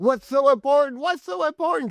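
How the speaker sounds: mock shrill, very high, loud top-of-lungs scream. Retelling her argument with him, imitating someone screaming. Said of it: "She's like screaming at the top of his lungs".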